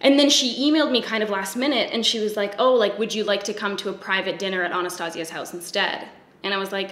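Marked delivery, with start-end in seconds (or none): none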